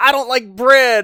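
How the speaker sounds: very high, very loud blurted scream. Retelling a scene on the Straw Hats' ship, imitating Law screaming. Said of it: "then he screams out".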